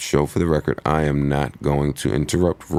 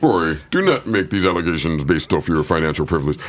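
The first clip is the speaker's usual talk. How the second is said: put-on, overly formal read-aloud voice; 2 semitones higher than usual. Mocking another speaker's reading: imitating a put-on best reading voice. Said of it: "trying to put on his ba-, best reading voice".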